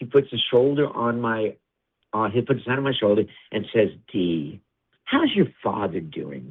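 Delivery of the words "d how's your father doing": phony, smiling charm, low, slow and swooping. Speaker retells a man greeting them with a hand on their shoulder, imitating a smiling charm. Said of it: "And that smile comes on".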